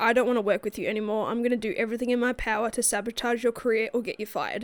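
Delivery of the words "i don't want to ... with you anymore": usual speaking voice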